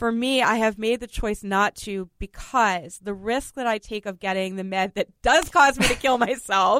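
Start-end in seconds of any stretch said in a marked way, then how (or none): 5.2-6.8 talking through laughter, higher and louder. Explaining a choice not to try other medications, laughing while talking. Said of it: "I know I'm laughing".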